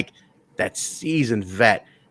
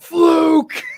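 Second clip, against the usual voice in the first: put-on angry wrestler yell, higher and louder; 6 dB louder than usual. Retelling a wrestler confronting his rival in the ring: imitating Bobby Roode yelling. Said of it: "he just kept yelling".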